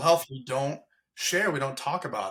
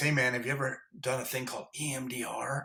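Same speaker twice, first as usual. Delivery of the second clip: hushed half-whisper under the breath; 6 dB quieter than usual. Retelling what a huge tough guy asked alone in the kitchen: imitating a half-whisper. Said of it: "And now he's whispering".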